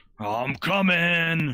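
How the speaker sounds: huge, giant booming voice echoing as if down a hallway. Narrating a scene, a giant voice calls out from the hallway: giant booming voice. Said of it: "a giant booming voice say".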